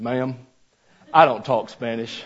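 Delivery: put-on real drawling Southern accent. Retelling what Mayo told a girl at Taco Bell, in Mayo's southern drawl. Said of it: "in his real southern drawl".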